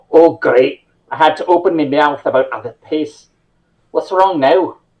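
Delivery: put-on solid Scottish accent. A player voices a character after the wagon breaks down, in a Scottish accent. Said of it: "good Scottish accent".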